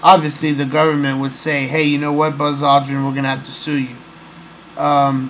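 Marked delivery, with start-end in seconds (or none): none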